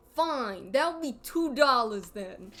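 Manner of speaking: put-on, acted-out New York accent. Switching back into a New York accent for a character. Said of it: "back into New York accent".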